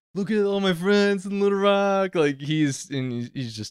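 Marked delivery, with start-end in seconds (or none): 0.1-2.1 mock overexcited hype, much higher. Retelling someone's Instagram live in front of a crowd: mock over-hyped excitement. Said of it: "he's like a little too hyped about this".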